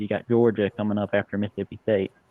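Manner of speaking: normal talking voice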